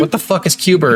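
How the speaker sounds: plain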